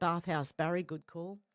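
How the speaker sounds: normal talking voice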